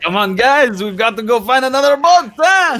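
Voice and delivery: fake New York mobster accent. Voicing a winning team again while casting: put-on New York mobster voice. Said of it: "kinda like a New York mobster".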